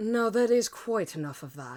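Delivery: put-on British accent. Trying to get a character's voice going: put-on British accent. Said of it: "It's there".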